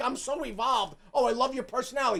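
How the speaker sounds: scornful, sarcastic put-on enlightened nice-guy voice. Mocking a guy on screen who praises a woman's personality: mocking imitation of a guy acting evolved. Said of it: "he's trying to play this whole thing like".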